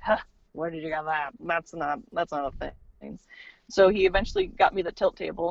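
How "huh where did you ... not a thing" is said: put-on dismissive scoff, quieter. Retelling how the cardiologist reacted to her suggested diagnosis, imitating a scoff. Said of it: "after he scoffed".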